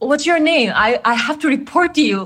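angry, confrontational, demanding tone pitched high. Retelling confronting a staff member in a hallway: retelling own angry demand. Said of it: "I was angry and say".

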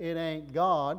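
Texan-sounding speech. Quoting what people said seeing Jesus walk on water, Texas accent. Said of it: "I know I'm putting the Texas accent in there".

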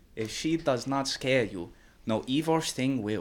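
put-on Chinese accent. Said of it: "It's just a Chinese impression".

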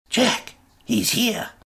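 urgent, sharp, high-pitched whisper. Reading a story where someone wakes the narrator: sharp whisper. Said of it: "whispering sharply in my ear".

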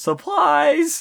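play-acted shrill, startling, sudden shout, very high. Retelling a movie scene where a student is found in a closet: imitating a yell. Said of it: "Who then yells".

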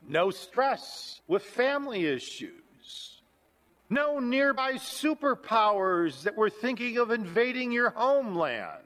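thick, heavy, laid-on sarcasm, meaning the opposite. Describing the time Isaiah wrote in, very sarcastic. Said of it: "I'm being very sarcastic with all those statements".

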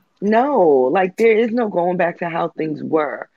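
ordinary talk

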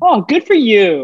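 very high, snippy, dismissive drawl. Retelling a reply to someone's news, mimicking her snippy tone. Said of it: "Exactly like what her tone was".

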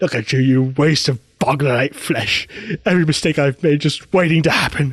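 put-on contorted proper British accent. Quoting the villain Boris the Animal: Boris the Animal voice. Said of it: "very proper British accent, but with a mouth that's not supposed to speak English".

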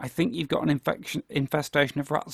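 ordinary talk

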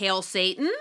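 rising intonation lifted on the word Satan. Naming a documentary title that has a question mark: question rise on Satan. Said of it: "it has a question mark, which is why I'm saying it like that".

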